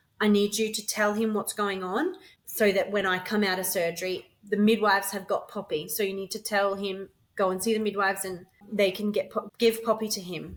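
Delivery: ordinary talk, nothing marked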